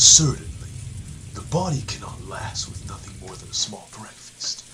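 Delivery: echoey voice ringing like a hall. Showing the other speaker how the Cross voice sounds: imitating the Cross voice. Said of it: "the Cross voice is like".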